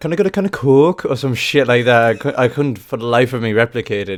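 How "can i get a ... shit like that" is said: loud, put-on Liverpool Scouse accent. Talking about an accent you love but say you can't do, try a put-on Scouse accent. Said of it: "Scouse accent".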